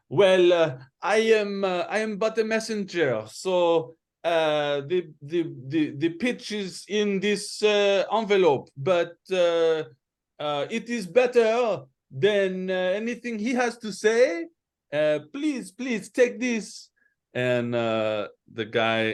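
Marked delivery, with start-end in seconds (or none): 0.1-16.9 put-on vaguely French accent, high-pitched. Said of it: "recognized the accent of the first one".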